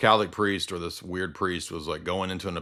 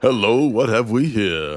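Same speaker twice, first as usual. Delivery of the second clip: loud, smooth, suave, charming tone; 4 semitones higher, 7 dB louder than usual. Asking for a Lando Calrissian impression and offering the line, Lando Calrissian impression. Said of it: "Can you do a Lando Calrissian impression".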